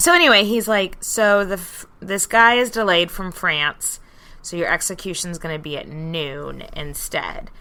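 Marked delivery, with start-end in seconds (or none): none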